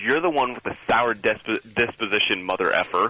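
plain

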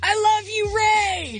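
put-on drunken yell.

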